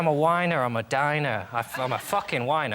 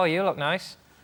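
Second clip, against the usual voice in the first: accidentally sarcastic-sounding tone; 3 semitones higher than usual. Speaker showing how even a meant compliment comes out, unintentionally sarcastic. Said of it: "you inherently sound sarcastic".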